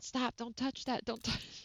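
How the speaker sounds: high yell, called out. Retelling multitasking from a room's doorway: imitating own yell.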